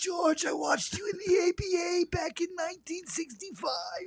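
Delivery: put-on very high-pitched old-timer voice with Brooklyn accent. Putting on a voice while addressing someone, old Brooklyn guy accent. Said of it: "You sound like some old guy from Brooklyn".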